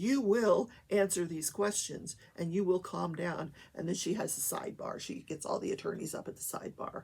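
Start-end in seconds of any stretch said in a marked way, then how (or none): 0.0-3.5 put-on angry voice. Retelling how the judge in court told a witness off: imitating an angry judge. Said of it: "She was pissed".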